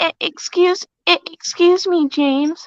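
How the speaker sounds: slow, stammering character voice, tripping on the start. Repeating the character's stammered line from the show: Percy impression. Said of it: "he's starting with".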